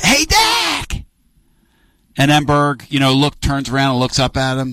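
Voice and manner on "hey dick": acted-out, very high-pitched yell. Retelling a story where a fan yells down to a broadcaster: imitating someone yelling. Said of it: "Bino yells down to Dick".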